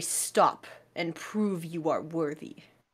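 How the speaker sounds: very deep bear voice. Voicing a bear who speaks in warning growls: incredibly deep bear voice. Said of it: "an incredibly deep voice that say".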